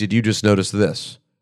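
ordinary delivery

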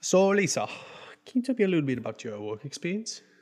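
put-on accent drifting between British and Australian. Playing an interviewer questioning Lisa in a role-play, British-Australian accent mix. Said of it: "I'll do British and Australian. It'll float between the two".

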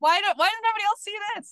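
high, loud, frustrated screaming yell. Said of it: "That's why I'm screaming it".

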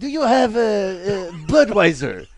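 put-on bad Italian accent, sounding French. Showing how he ordered beer from an italian, bad italian accent. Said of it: "That was almost more French than anything".

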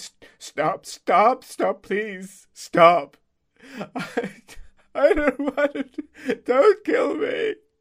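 very high, very loud, pleading sobs. Voicing a bloodied character begging not to be killed: crying while pleading. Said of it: "is crying a lot now".

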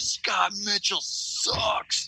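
high, light, half-shouted jab. Retelling a call to a buddy's phone, retelling a yell into the phone. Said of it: "and I remember yelling at the phone".

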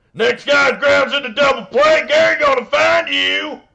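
shrill, very loud, high barking voice at full blast. Retelling a coach's locker room rant: Gary Busey war veteran character.

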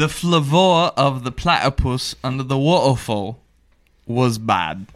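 plain British accent throughout. Asked by a friend to try accents, speaker says a sentence in a British accent. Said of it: "that was British".

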